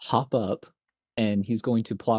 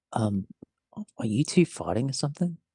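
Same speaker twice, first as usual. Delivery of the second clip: whispered speech. Voicing a character who scoots over to ask about a fight: whispering. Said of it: "he's gonna whisper to him".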